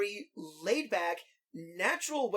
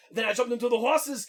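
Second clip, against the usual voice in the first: loud, hokey, matter-of-fact delivery; 3 semitones higher, 6 dB louder than usual. Showing the hokey way of doing an Arnold line: hokey Arnold impression. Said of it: "our hokey Arnold impression way of doing it".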